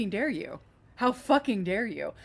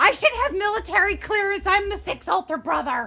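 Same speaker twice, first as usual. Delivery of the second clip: mock screaming child voice, higher and louder; 10 semitones higher, 4 dB louder than usual. Retelling how an irritating child from a show keeps boasting: imitating a kid screaming. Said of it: "go around like this on a constant episodic basis and scream".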